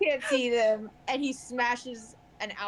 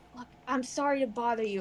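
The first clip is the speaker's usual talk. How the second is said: quiet, hushed put-on voice. A game master voicing Roa approaching the party, in a hushed voice as Roa. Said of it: "keeping my voice hush".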